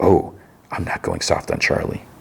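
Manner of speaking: put-on whisper. Retelling a scene where a character whispers a reply: imitating a whisper. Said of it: "And Dexter whispers".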